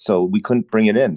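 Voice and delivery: ordinary talk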